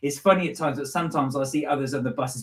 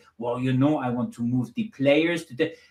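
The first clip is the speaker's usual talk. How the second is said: slower put-on French accent. Retelling how a man answered interview questions about his plans, imitating him in a french accent. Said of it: "obviously with a French accent".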